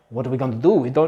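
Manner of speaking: flustered, worried, panicky, freaked-out voice. Retelling how scientists reacted to a missing dog: imitating panicked scientists. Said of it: "they're kind of freaking out and going".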